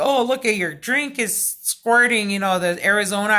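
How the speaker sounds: usual speaking voice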